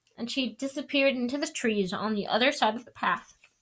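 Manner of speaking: ordinary talk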